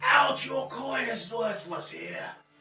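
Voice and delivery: very high, shrill screaming at the top of the lungs. Voicing a man ordering someone out of the market square: screaming at the top of voice. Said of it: "He's screaming at the top of his voice".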